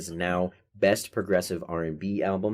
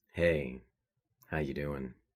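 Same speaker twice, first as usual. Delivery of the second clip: low, silky-smooth, buttery, slick delivery; 5 semitones lower, 7 dB quieter than usual. Asked to give the folks a sample of his smooth voice: smooth voice. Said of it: "give the folks just like a sample of your smooth voice".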